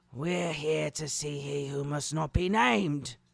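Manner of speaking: rasping. Reading a story aloud, a werewolf announcing arrival: rasping. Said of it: "rasped Greyback".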